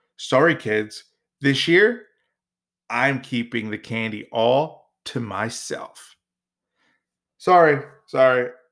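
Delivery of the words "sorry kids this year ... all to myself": plain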